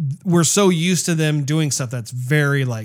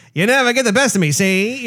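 vintage Hollywood transatlantic accent, pitched up; 8 semitones higher, 3 dB louder than usual. Speaker showing how the daughter character should have sounded; old-time transatlantic accent. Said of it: "I do wish the daughter had a transatlantic accent".

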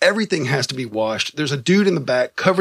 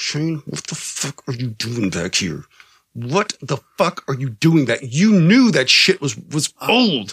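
put-on speech through clenched teeth, slower. Retelling how Don came back and confronted Shane: imitating Don through gritted teeth. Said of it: "goes through gritted teeth".

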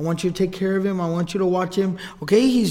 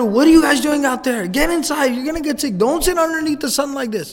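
furious, angry, loud screaming and shouting; 7 semitones higher than usual. Retelling a mother rushing out to the kids: imitating furious screaming. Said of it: "and I'm screaming, I'm furious".

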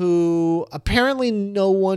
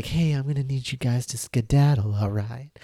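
soft-spoken, calm, low, soothing voice; 5 semitones lower, 5 dB quieter than usual. Imitating the actress coming in to clear the room: soothing voice. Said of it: "comes in and she's like".

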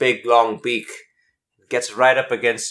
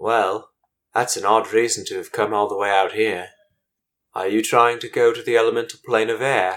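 put-on elderly bird character voice. Voicing an old bird elder who speaks to the players: old bird elder's voice. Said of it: "he says to you in common".

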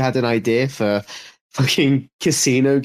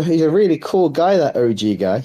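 sarcastic, tongue-in-cheek tone, not meant literally; 3 semitones higher than usual. Praising a person the speaker dislikes, answering another speaker: sarcastic. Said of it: "I was being sarcastic".

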